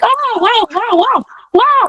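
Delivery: high, slow, starstruck amazed gushing. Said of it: "you're like".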